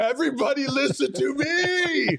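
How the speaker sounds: very high, very slow, drawn-out shouting. Acting out a chat viewer's all-caps message: imitating Blue Gold yelling. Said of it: "In all caps".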